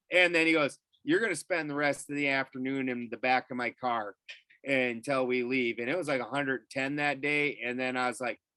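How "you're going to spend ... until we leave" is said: ordinary talk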